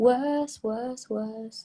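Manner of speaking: put-on fake British accent. Repeating the word after saying it must be said with a British accent. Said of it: "you have to say it with a British accent".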